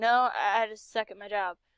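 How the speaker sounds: plain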